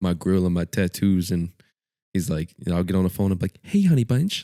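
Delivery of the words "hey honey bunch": very high-pitched put-on voice.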